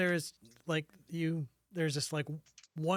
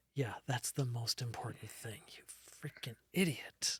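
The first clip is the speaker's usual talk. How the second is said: put-on big, heavy sigh; 5 semitones lower, 6 dB quieter than usual. Speaker retells another female voice's reply in a scene, imitating a massive sigh. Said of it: "you kind of hear a massive sigh".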